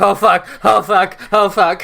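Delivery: panicked, shrill, loud voice.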